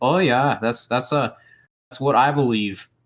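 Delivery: put-on Canadian-accented speech. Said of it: "fell into a, uh, Canadian accent there".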